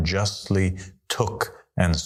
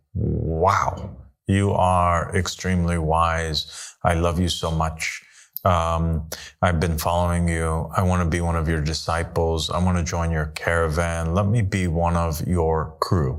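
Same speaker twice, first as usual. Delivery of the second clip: ordinary talk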